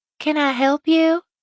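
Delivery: thin little voice, small and pitched high. A woman answers her door to a visiting mother, in a small, thin voice. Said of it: "she asked in a small, thin voice".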